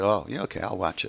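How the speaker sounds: normal talking voice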